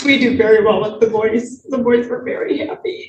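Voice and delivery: speaking through tears, crying while talking. A murder victim's sister, asked for her thoughts, speaks about the boys, crying while talking. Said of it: "You're crying".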